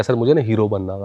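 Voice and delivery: ordinary talk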